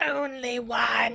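put-on storybook mermaid voice. Retelling a book scene where a mermaid refuses Harry: mermaid voice. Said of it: "That was my mermaid voice".

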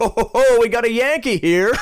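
put-on high, loud, brash New York accent, belted out.

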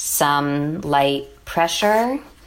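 very slow, low, drawn-out phrasing. Retelling the fertility doctor's reply to her question, saying it slowly. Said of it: "say slowly".

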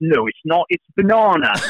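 put-on squabbling, high, slow British accent of a little boy. A father retells his son arguing with his daughter, in a child's British accent. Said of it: "my kids all picked up British accents".

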